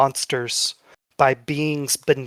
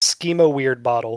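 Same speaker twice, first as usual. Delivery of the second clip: plain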